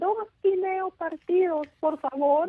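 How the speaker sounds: tiny, very high, squeaky little voice. Retelling ordering room service as young girls: imitating little squeaky voices. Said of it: "our little squeaky voices said".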